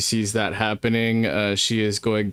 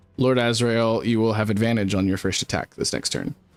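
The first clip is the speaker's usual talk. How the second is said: usual speaking voice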